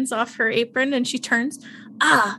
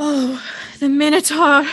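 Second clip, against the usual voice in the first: loud gasp of worshipful, awestruck wonder; 3 semitones higher, 6 dB louder than usual. Voicing a character dropping to her knees before the minotaur: gasping in awe.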